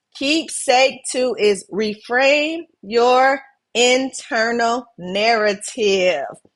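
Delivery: deliberately slow delivery. Introducing the second keepsake to the audience, the speaker says it slowly. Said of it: "I said that slow".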